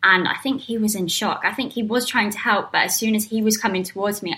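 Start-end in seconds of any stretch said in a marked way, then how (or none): none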